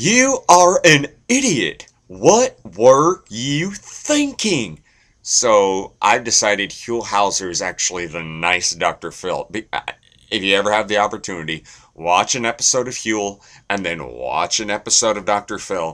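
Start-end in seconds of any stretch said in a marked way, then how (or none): 0.0-4.8 loud, high, swooping scolding rant. Comparing the way Huell Hauser and Dr. Phil speak, do a Dr. Phil impression. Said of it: "And then there's Dr. Phil".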